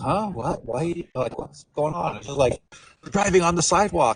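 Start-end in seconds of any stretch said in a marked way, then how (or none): 0.0-2.2 play-acted, slow, totally baffled, lost confusion. Retelling driving on the sidewalk, the speaker imitates the driver sounding totally confused. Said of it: "he's like totally confused".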